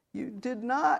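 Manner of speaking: high groaning voice. A man in tears answers a woman's apology: groaning. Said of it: "he groaned".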